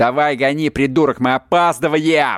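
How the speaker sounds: nasty, vile, obnoxious put-on voice. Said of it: "вот этим вот мерзким голосом, мерзкой интонацией Собчака говорил".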